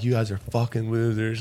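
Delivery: put-on acted screaming. Retelling confronting police after they smashed a window: imitating own screaming. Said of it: "just screaming".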